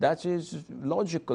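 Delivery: musing softly to oneself.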